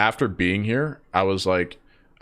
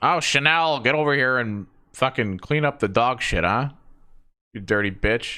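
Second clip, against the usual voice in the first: put-on acted older lady voice; 3 semitones higher than usual. Acting out an imagined older woman calling the dog: imagined older woman's voice. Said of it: "an older, like, milf".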